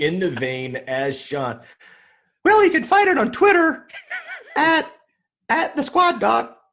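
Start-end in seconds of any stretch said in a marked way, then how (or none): 2.4-6.4 poor put-on high-pitched kid voice. Giving the documentary's social handle as his thirteen-year-old self: imitating himself at thirteen. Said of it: "my bad me imitation of myself as a thirteen-year-old".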